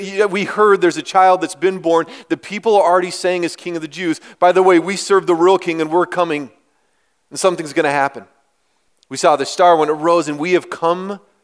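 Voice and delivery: plain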